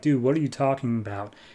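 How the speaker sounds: ordinary talk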